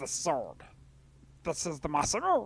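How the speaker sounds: swooping frog character voice. Trying to recall how they used to do a character's voice, in a Frog voice. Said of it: "I think that's how you did it".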